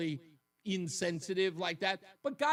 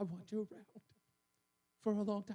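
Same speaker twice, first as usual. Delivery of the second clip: soft, put-on half sob, half sigh; 6 dB quieter than usual. The speaker retells what a woman says to him; imitating half-crying, half-sighing. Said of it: "she says it with half of a cry and half of a sigh".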